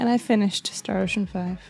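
quiet, lacklustre, unexcited, unenthused delivery. Announcing they finished a game, sounding not too happy. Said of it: "You don't sound too happy about that".

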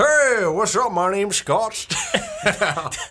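very slow drawl, every word dragged, swooping wide. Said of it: "really hard to just say a sentence as [name]".

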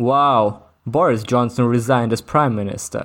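put-on deadpan, flat, emotionless delivery. Retelling a co-host's remark during a wrestling recap, imitating Dave's zero-emotion tone. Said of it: "like with with zero emotion".

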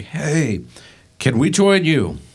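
high, loud, yelled calling out. Calling out to a man near the foot of the mountain, yelling. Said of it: "Mark yells at him".

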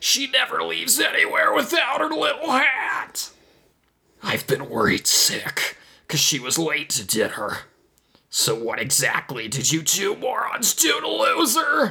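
gravelly, very high-pitched angry alien voice. Reading a story aloud, voicing an alien confronting two characters, in a gravelly alien voice. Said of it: "An ET disciple with the ability to make clones of itself. / A teal-skinned E.T. with a dark gray fedora burst from the fortress's entrance, / That was my wife! / said a gravelly voice from behind the".

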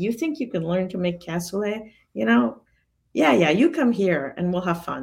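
play-acted gruff, sneering, scoffing voice. Retelling how he answered the request to come for a stage, imitating a sneer. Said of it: "he was kind of sneering".

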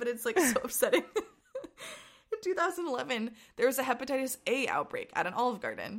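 words spoken through laughter. Apologizing for laughing, the speaker keeps telling the story while laughing. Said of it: "I'm sorry I'm laughing".

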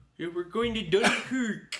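high, lisping voice. Imitating an actor in Dunkirk: imitating Mark Rylance with a lisp. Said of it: "does he talk in a lisp still".

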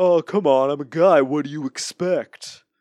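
put-on loud Brooklyn accent. Describing a character as an 80s jerk, voicing him in a brooklyn accent. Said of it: "sliding into a Brooklyn accent".

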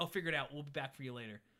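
plain

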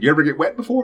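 very high, squeaky, bad frog puppet voice. Imagining a Muppets Training Day line as Kermit: attempted Kermit voice. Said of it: "can't even do the Kermit voice".

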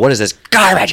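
very loud, high, furious, mad outburst. Retelling throwing the plate in front of everyone: imitating self getting real mad. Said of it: "I just get real mad".

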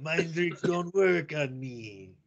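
very slow, high, drawn-out vampire voice. Joking after a friend's impression, in a Dracula voice. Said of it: "Dracula there at the end".

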